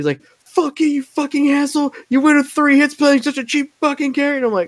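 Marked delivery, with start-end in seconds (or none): 0.4-4.4 put-on, very high, raging, furious scream. Retelling an online opponent screaming after losing: imitating someone screaming angrily. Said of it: "he puts on his mic just to start screaming at me".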